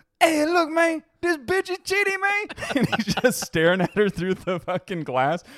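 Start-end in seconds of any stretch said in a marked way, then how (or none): 0.2-2.5 high, loud, exaggerated mock Spanish accent. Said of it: "he just has a huge Spanish accent".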